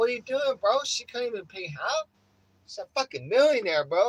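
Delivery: loud, high, mock scoffing, needling jab. Retelling teasing a friend about paying four hundred dollars: retelling mocking a friend. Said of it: "we were mocking the shit out of him".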